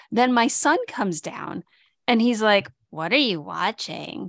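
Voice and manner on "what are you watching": play-acted condescending, talking-down tone. Retelling how their son came downstairs and asked, mimicking a condescending tone. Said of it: "with really kind of condescending tone in his voice".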